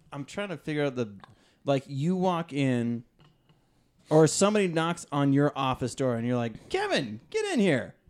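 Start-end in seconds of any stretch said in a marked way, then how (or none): 6.7-7.8 mock upbeat, sunny, cheery, pitched-up voice. Calling someone in through your office door, cheery voice. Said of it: "you have that kind of like cheery".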